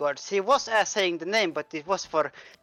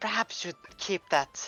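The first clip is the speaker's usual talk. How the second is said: in-character whisper, quieter; 5 dB quieter than usual. Playing a character who whispers over to another: whispering in character. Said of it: "Athos will whi-, will whisper over".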